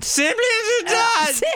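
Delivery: very high, slightly sozzled royal voice. Joking with a co-host about Harry losing his British accent, in a tipsy Queen voice. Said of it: "Sounds a little bit like you've already been into that gin, Queenie".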